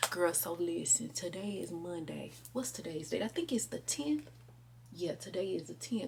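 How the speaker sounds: very quiet, hushed, barely voiced whisper. Talking to her viewers from a closet, needing to stay quiet: whispering. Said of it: "y'all know I gotta whisper".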